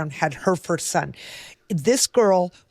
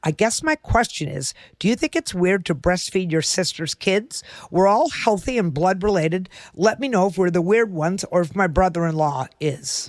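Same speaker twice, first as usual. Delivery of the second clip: usual speaking voice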